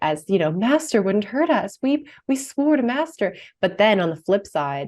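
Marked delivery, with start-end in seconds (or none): 0.5-3.4 high, sweet, nicer, creature-like voice. A speaker describing Gollum in the movies, quoting his nicer side in a high-pitched Gollum voice. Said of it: "talking in his like nicer, high-pitched voice".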